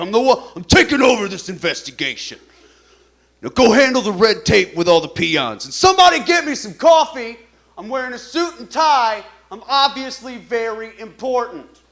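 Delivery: loud, pompous, self-important barking, arrogant tone. Acting out being the profiler who takes over from local cops: playing a self-important FBI profiler. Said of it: "the guy that walks in and pisses off the local cops".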